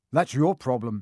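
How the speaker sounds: plain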